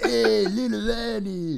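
cartoonish, very high put-on creature voice. Speaker does a Star Wars character impression, Watto voice. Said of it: "that's just Watto's voice".

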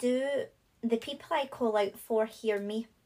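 ordinary talk, nothing marked

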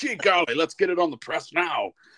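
old-fashioned cartoon voice. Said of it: "they talk like people at, s-, at Speed Racer".

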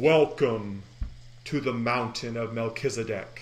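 big, loud, booming voice. As a stone slab shoots up, the storyteller voices a greeting: booming voice. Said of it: "you hear a booming voice".

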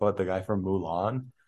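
ordinary talk

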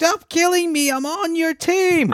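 shrill drawn-out scream.

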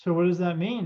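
normal talking voice

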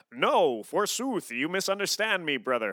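kind of Greek-sounding character voice. Suggesting how a character might talk, in kind of a Greek voice. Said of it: "I was hearing it in kind of that Greek".

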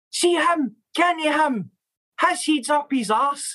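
mock shouting. Retelling how a former coach shouted from the side of the park: imitating a coach shouting. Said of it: "he's shouting".

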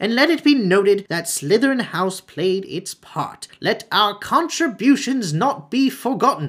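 calling out in a high, reedy voice. Narrator voicing Phineas Nigellus calling out from his portrait, high, reedy voice. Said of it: "called in his high, reedy voice".

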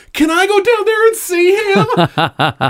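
put-on very high, excited little kid voice. Retelling a woman running back up to the speaker, in little kid at Christmas voice. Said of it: "in the most little kid at Christmas fucking voice goes".

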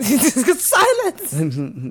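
put-on angry high German-accented shout. Retelling a character's angry reply: imitating an angry german shout. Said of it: "Very angry German".

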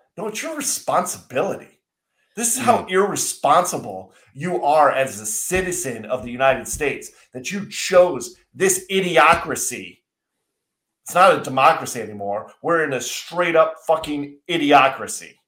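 heated, mounting angry rant, getting mad. Mid-rant in a conversation, getting mad. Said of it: "I am getting mad".

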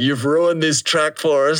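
high-pitched yell. Speaker retells a friend pointing at the MC who ruined the track: retelling friend's yell. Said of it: "just yelling at him".

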